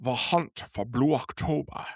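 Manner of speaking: soft, hushed, purring classic film-star voice. Closing a podcast episode, the speaker does a Sean Connery impression. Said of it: "That's my best Sean Connery impression".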